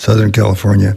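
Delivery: said quietly. Speaking to an audience about family trips, said quietly. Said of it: "I'll say it quietly".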